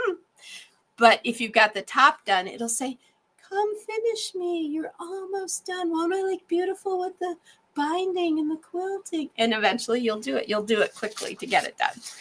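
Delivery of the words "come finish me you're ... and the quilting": tiny, soft, high, coaxing, wooing put-on voice. Speaker voicing an unfinished quilt top that woos them to finish: little voice for the quilt. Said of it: "Did you like my little voice there?".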